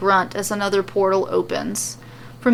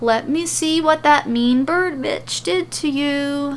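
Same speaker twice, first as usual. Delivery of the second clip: put-on coddling baby-talk tone, pitched up; 6 semitones higher than usual. Narrating a story, reading Liv's line to Adam as she peels his bandage, in a babying voice. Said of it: "saying in a babying voice".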